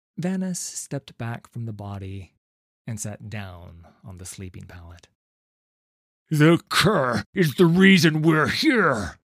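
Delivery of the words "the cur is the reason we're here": very loud, high-pitched, scornful sneer. A narrator reads a man's line in a novel, sneering. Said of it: "he sneered".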